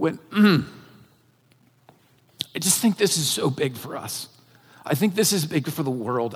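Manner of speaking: soft, choked-up voice catching with emotion. Speaking of what God can do with a small seed, the speaker gets choked up. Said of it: "I am getting choked up right now".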